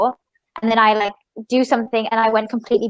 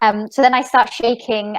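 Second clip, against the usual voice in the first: ordinary talk, nothing marked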